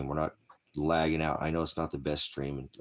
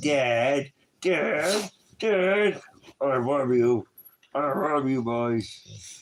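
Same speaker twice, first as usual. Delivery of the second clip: very high, stretched-out, drawn-out doggy voice; 10 semitones higher, 7 dB louder than usual. Speaking for the dog who just drooled on everyone: voicing the dog. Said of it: "He's like".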